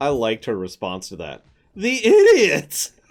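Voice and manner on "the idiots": very high, very loud, shrill, galled, indignant outburst. Commenting on a scene, the speaker repeats a woman's line, mock-indignant. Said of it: "you could just hear the gall in her voice".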